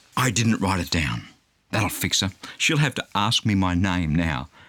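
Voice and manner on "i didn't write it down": mock-strained, through clenched teeth, much lower. Retelling answering a carer at the doctor's, through gritted teeth. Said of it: "I say through gritted teeth".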